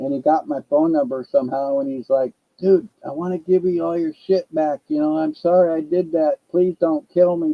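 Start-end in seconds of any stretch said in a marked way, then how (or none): 2.6-7.5 put-on frightened, scared voice. Retelling how a man who took his things called him: imitating a scared plea. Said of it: "he started to get scared".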